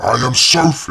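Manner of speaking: deep, loud, inhuman monstrous voice. Reading a story where a transformed figure speaks, in a deep, inhuman voice. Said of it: "she said in a deep, inhuman voice".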